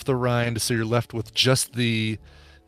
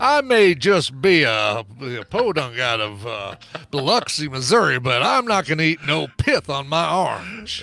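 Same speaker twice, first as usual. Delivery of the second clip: put-on southern gentleman accent, very slow drawl; 4 semitones higher than usual. Continuing the bit as a diner who refuses orange pith: imitating a southern gentleman. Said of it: "They're just a southern gentleman".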